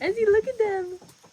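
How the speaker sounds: put-on very high, delighted, cooing baby-animal voice.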